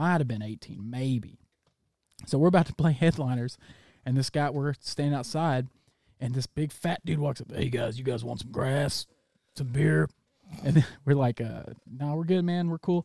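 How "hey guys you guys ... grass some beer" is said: put-on voice like a heavy smoker. Retelling what a man who walked up outside said, in a put-on smoker's voice. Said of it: "he talked like this because he's drank and smoked a lot".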